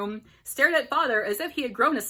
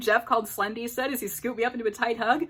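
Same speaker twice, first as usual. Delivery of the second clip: ordinary delivery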